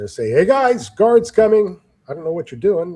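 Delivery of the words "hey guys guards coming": high, yelled call. A player's character yells over to others out of sight, yelling a warning. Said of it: "I'll try to yell over to them".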